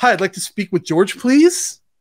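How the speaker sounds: desperate tone ending on a rise. Demonstrating a bad habit when calling a gatekeeper, desperate tone. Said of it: "This is a desperation in your tone".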